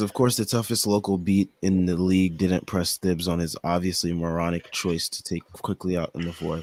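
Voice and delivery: normal talking voice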